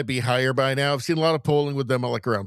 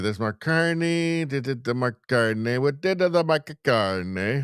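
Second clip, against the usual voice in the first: put-on Italian accent. Reading out a commenter's name, slipping into an italian accent. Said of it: "I don't know why I'm doing an Italian accent".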